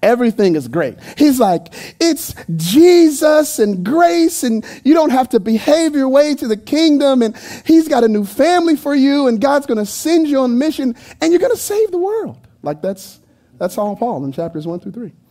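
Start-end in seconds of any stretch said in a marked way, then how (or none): 2.0-12.4 cheering voice. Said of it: "Paul is like Buddy the Elf".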